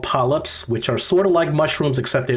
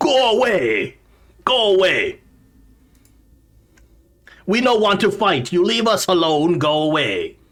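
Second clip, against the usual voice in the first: rough, very gruff creature voice, pitched up; 6 semitones higher than usual. The narrator voices someone behind a blocked door, in a gruff voice. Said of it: "a lot gruffer of a voice than a goblin".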